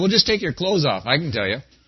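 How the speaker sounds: low, swooping, mocking, sarcastic voice. A counselor retells a reply once given to clients, retelling a sarcastic reply.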